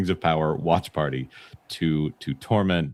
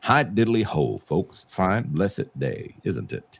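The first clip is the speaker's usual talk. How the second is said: put-on cartoon frog critter voice. Greeting the chat, in a Brer Frog voice. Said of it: "You sounded like Brer Frog".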